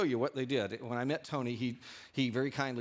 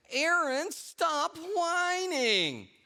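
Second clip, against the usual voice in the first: very high, shrill, sing-song nagging whine; 5 dB louder than usual. Retelling what a woman said to her child, imitating a whiny voice. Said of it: "she got a really whiny voice".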